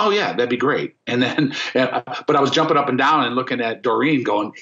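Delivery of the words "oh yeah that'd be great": feigned calm, cool, casual, offhand voice. Recalling being asked to audition for Bad Company, he replays his answer, retelling playing it cool. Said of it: "in my cool voice".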